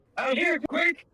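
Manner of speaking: very high, screamed call at full voice. Calling companions to come outside quickly: screaming for help. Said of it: "if you're screaming".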